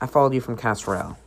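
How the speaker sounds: ordinary talk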